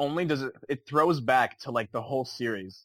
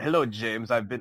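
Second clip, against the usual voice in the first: put-on villain voice. Imitating the villain greeting Bond in the trailer: Christoph Waltz voice. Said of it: "in his awesome Christoph Waltz voice".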